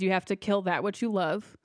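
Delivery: ordinary talk, nothing marked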